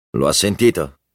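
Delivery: plain reading voice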